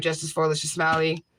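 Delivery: ordinary delivery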